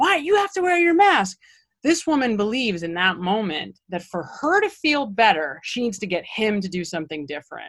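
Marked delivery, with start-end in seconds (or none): 0.0-1.4 mock very high-pitched, loud yell. Retelling how a woman yelled at a jogging friend: imitating someone screaming. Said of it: "from across the street screaming".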